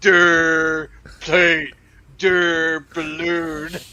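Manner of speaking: put-on loud dopey baby voice, drawn-out "der". Imagining a baby in its high chair looking at things around the house: imitating a baby. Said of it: "A baby just sitting in its high chair".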